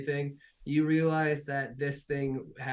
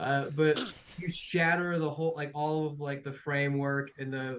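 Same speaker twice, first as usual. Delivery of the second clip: ordinary delivery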